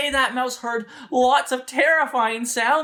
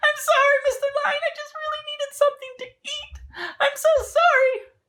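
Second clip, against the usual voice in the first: tiny squeaky mouse voice, very high. Storyteller voicing the little mouse as it answers the lion: little mouse voice. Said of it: "the little mouse says".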